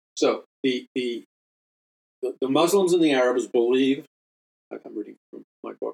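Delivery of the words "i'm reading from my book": soft, fast, mumbled delivery. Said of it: "sorry, I'm mumbling".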